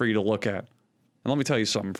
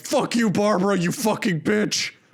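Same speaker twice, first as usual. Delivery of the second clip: put-on raging superhero voice, higher pitch; 8 semitones higher, 4 dB louder than usual. Imagining a rage-fuelled Batman movie, acting out his line: imitating enraged Batman. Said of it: "injected with fucking rage hormone".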